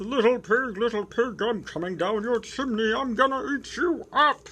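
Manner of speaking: loud, high, furious, angry wailing cry. Narrator reading a children's story, the wolf up on the roof: wailing Big Bad Wolf voice. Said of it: "A wolf came along and knocked on the door. / Well, the wolf was angry, and he jumped on the roof and wailed, / Well, the wolf was angry, / [name]".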